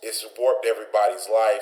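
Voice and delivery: ordinary talk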